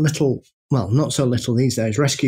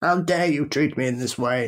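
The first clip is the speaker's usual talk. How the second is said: put-on indignant, offended cat voice; 3 dB quieter than usual. Telling how her cat walked away, voicing the cat, mock-offended. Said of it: "like I'd offended her".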